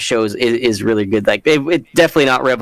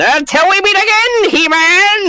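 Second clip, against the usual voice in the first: very high, slow, drawn-out villain voice; 4 dB louder than usual. Imagining the movie's final line: imitating Skeletor. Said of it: "ends with him going".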